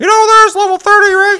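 shrill, very high, booming put-on voice. Retelling what someone said, the speaker does a Josh impression. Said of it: "this is my best impression of him".

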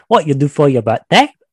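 put-on failed British accent drifting Australian. Retrying the server's question: bad British accent attempt.

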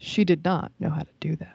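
all-knowing storybook narrator voice. Telling friends about a traumatizing haircut, switching into a narrator voice. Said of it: "Narrator voice".

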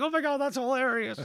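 very high, put-on giggling child laughter through words. Retelling hearing a soloed kick drum as kids in the studio, imitating laughing as kids. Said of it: "just laughing at the sound".

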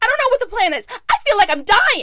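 very loud, very high-pitched, shrill yelling. Recalling yelling at their dad and stepmom in front of the kids, retelling own yell. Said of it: "I'm like yelling. I'm like".

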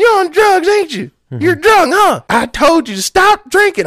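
put-on very high-pitched old woman scolding yell. Retelling an old woman yelling at a stranger in a car, imitating her yelling. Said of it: "this old woman she's yelling at him".

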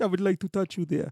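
clumsy, trashy, bad put-on Indian accent. Playing out a scene with Kelly, in a bad Indian accent. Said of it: "My Indian accent is trash".

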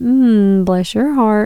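slow, sweetly polite tone with veiled, insulting put-down. Showing two ways to say a Southern phrase: polite put-down. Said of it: "Or you can be like".

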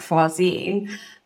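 put-on English-sounding accent.

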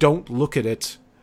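loud shouted voice. Voicing a character warning the others not to look: shouting a warning. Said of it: "she shouts to the rest of you".

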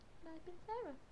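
very soft, hushed, very quiet indoor voice. A podcast host signs off the episode, said quietly. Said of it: "we're doing them quietly".

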